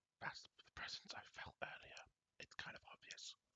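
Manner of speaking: very quiet, hushed, breathy whisper. A player speaking in character during a tabletop game, whispering. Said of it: "Elena basically whispers like".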